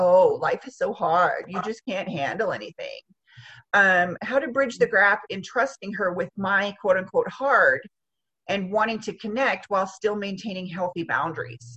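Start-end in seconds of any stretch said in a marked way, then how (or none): 0.0-3.0 put-on mocking voice. Quoting how she mocks the writer during hard times, imitating a mocking tone. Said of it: "mockingly saying".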